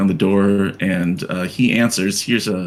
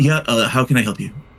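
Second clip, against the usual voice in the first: toned-down voice, sounding mildly confused; 4 semitones higher than usual. Redoing the door line after calling the first take too much. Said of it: "No, that's too much".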